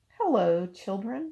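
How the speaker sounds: sugary, sweet, gentle voice. Reading a story aloud, someone in the hall greets the children in a sweet voice. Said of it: "someone said in a sweet voice".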